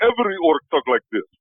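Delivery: clumsy put-on Russian accent. A player voicing an orc answers the group, in a bad russian accent. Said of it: "I committed to a shitty Russian accent".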